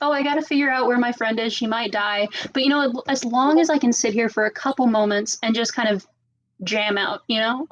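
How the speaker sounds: ordinary talk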